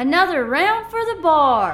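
very high, loud yell. Voicing a character standing on a chair calling to the bar: yelling. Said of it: "Misk stands up on her chair and yells out".

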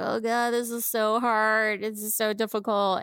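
slow, play-acted, really upset lament, close to tears. Retelling a husband's complaint about a facelift, imitating someone upset. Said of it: "he was, like, really upset. He's like".

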